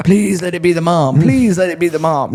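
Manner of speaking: high, mock begging, pleading voice. Retelling calling a friend's house, hoping the dad won't answer: acting out pleading prayer. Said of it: "praying their dad doesn't answer".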